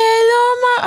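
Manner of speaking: put-on sweet, cute, high little child voice. Mother retelling her daughter's phone greeting, imitating Toluwa's cute voice. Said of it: "she has the cutest voice".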